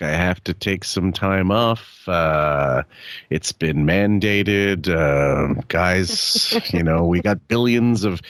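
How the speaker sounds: defeated, beaten-down tone, very slow and dragging. Imitating a clip of someone announcing time off: imitating a defeated voice. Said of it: "this kind of defeat in his voice".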